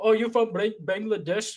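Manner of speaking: put-on Indian accent. Retelling a caller being mocked on the phone: imitating a put-on Indian accent. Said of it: "Indian accent".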